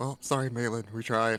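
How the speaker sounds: tossed-off offhand aside, half to herself. Voicing Tia apologizing to Malin in the fog: muttering under her breath. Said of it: "you hear Tia say under her breath".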